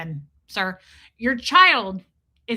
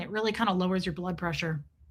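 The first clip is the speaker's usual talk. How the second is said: plain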